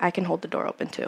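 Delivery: hushed, breathy whisper, close in the ear. Retelling what he said while holding the door open: imitating a whisper. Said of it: "he kinda whispers in my ear".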